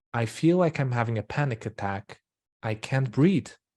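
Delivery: ordinary talk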